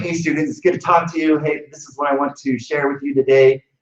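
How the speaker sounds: excited, high-energy voice. A teacher demonstrates greeting students with extra energy, really excited. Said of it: "I put that extra energy in".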